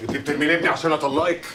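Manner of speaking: shouting. Accusing the wife of throwing out his son to get divorced: shouting. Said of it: "وطي صوتك يا سيدي".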